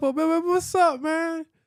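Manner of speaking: high, loud, fake-friendly delivery. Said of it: "sometimes I play along".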